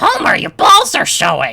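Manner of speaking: high, loud cartoon voice pushed through the throat. Trying a hard cartoon impression, says a line in a Marge Simpson voice. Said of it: "Marge Simpson is hard to do. ... it's like weirdly throaty, Marge's voice".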